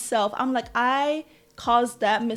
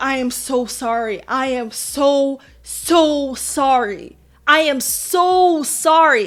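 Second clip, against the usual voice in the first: put-on, very slow, sobbing, bawling voice; 4 dB louder than usual. Retelling apologizing at the mentor's house, imitating own bawling apology. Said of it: "I'm bawling".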